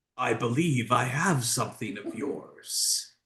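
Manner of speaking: feminine voice, a bit gruff, with edge. Voicing a mysterious voice heard by the players: feminine voice with a gruff edge. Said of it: "although feminine, has an edge to it, a bit gruff".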